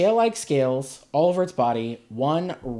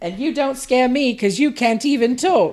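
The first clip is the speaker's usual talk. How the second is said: put-on very high, really old little old lady voice; 9 semitones higher, 3 dB louder than usual. Retelling her line to the monster, really old lady voice. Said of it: "I just gave her a really old lady voice".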